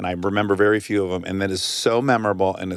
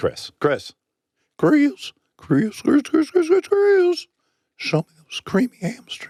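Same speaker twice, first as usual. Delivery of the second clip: cartoon character voice in very high upper register. Speaker attempts a Family Guy character voice, calling out to Chris. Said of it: "I used to be able to do that voice".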